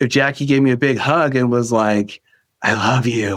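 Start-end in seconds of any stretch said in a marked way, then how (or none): 2.6-3.4 unsettling, creepy put-on voice. Imagining Jackie giving a big hug and saying it: put-on creepy voice. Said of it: "in a creepy voice".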